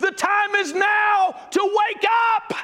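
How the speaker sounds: crying shout, very high, at top volume. Retelling what Brother Hubert shouted in church, imitating Hubert shouting and crying. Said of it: "shouting and crying at the top of his voice".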